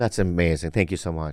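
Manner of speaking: dry, sarcastic tone. Thanking a friend for a gift: sarcastic thanks. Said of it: "you're being sarcastic right now".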